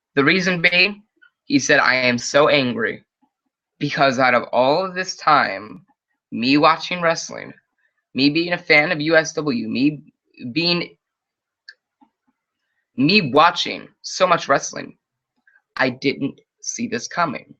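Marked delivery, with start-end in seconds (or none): none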